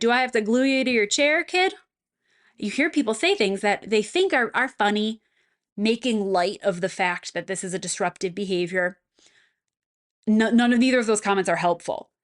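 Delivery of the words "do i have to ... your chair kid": mocking sarcastic tone with raised pitch. Showing a sarcastic remark to an older student: sarcastic. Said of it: "say something sarcastic like".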